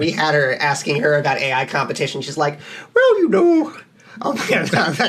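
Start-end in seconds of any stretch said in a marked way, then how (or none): 2.9-3.7 squeaked out, high-pitched and loud. Acting out how a guest answered a question about AI competition, in an inaccurate Catherine Tucker voice. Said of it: "my Catherine Tucker voice".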